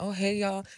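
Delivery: put-on abrupt switch to very high, calm voice. Retelling greeting the arriving cops right after screaming: retelling own sudden calm greeting. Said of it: "I calm down when the cops come around".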